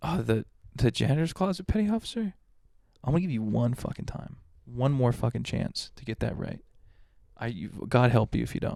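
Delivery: put-on calm, menacing voice. Retelling a petty officer's threat to a recruit: imitating someone speaking calmly. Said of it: "he says it calm as fuck".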